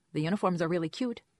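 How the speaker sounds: ordinary delivery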